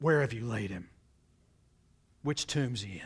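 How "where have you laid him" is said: deeply troubled, greatly upset, angry voice. Retelling his words in the story, acting out a greatly troubled voice. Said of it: "with this greatly troubled voice".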